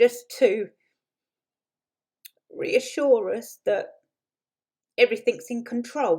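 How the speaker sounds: high, choked-up voice catching, close to crying. Speaker talking about Camilla, voice choking up, near tears. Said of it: "oh, I'm going to cry, sorry".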